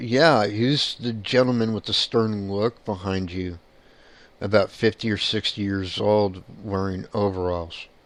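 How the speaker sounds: ordinary talk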